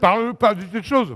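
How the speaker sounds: talking with mouth full. Mid-conversation over dessert, the speaker answers while talking with mouth full. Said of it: "j'ai la bouche pleine".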